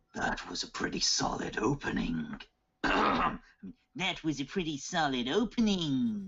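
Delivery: goofy, silly, high giant dragon monster voice. Voicing the dragon as it looks down: stupid dragon voice. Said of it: "the stupid voice comes back".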